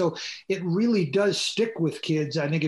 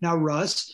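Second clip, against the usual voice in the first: ordinary talk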